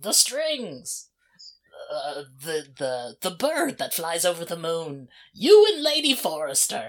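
loud, rising, half-mumbled shouting. Narrating a doomed character as he walks off, Rogvir mumble-shouting to himself. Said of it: "just mumble shouting things to himself".

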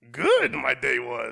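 loud, booming, slow, creaky backwards talk. Answering how the day was, talking like Yoda. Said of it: "talking like Yoda".

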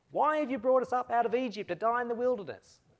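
high, whingeing, whiny complaining tone. Reading a Bible passage where the people complain against God and Moses, whingeing. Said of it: "Clearly needs to be read with that tone of voice".

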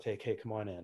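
ordinary talk

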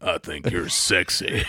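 deep, rough, gravel-edged put-on voice. Imagining what a woman with a deeper voice says on your lap, deep gravelly voice. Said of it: "she talks with a little gravelly voice".

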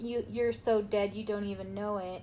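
ordinary talk

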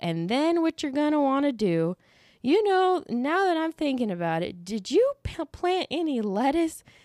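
unhurried, rambling, high-pitched Southern drawl. Retelling a conversation with grandpa, imitating his slow southern drawl. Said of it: "he talks really slow".

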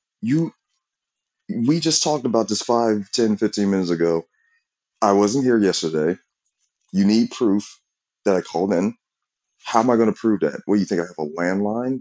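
ordinary talk

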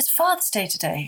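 ordinary delivery

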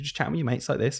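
soft, quick, casual chatting voice. Explaining voice for teaching, showing how you chat with mates: soft chatting voice. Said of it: "which is much more soft because you're just chatting".

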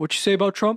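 confrontational brute voice. Acting out a brutish guy confronting someone in jail: imitating a brutish guy. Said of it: "brutish guy would, like, come up".

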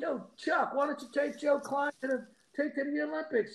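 high-pitched yell. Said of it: "I'm yelling out".

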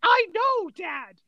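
play-acted exasperated, fed-up, angry, frustrated tone. Retelling a life or death film scene, answering Sean Connery, imitating a really angry Harrison Ford. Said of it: "he's like really angry because he's frustrated".

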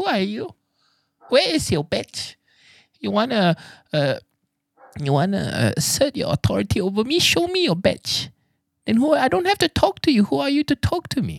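very high, shrill, swooping, challenging, demanding rant. Retelling a woman answering a mall worker's mask request: imitating the pork badge lady. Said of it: "Marina Bay Sands was like".

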